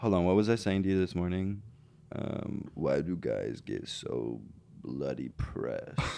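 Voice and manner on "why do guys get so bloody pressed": whispered, slow, breathy, very straight guy voice. Answering a request for the straightest impression of a phrase: straightest impression of a guy. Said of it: "what's your straightest impression of that phrase?".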